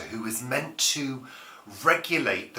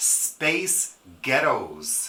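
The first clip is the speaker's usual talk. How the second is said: American-accented voice; 3 semitones higher, 4 dB louder than usual. Saying the words space ghettos for a friend: american accent. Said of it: "you say it in an American accent and it sounds Scottish".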